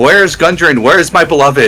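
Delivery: screaming out. Narrating a fight, a character misses his shot and screams out again: screaming. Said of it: "he just screams out again".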